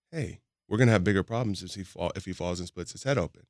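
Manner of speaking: usual speaking voice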